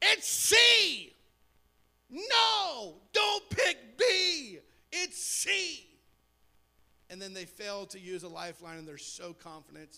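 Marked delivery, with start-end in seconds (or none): 0.0-5.8 very slow, high, shrill, loud, swooping scream. Describing watching a contestant pick the wrong answer, acting out screaming at the TV. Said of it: "you're screaming like they can hear you".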